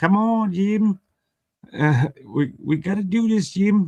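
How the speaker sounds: put-on very high Australian accent, slow and drawn out. Retelling what a woman said to set something up: imitating an Australian accent. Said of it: "with her Australian accent".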